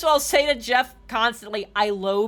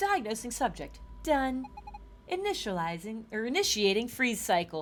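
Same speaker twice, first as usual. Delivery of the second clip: hushed, very quiet mechanical robot voice; 3 semitones lower, 10 dB quieter than usual. Showing off a voice between thoughts, the speaker talks in a robot voice. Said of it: "I make a good robot voice".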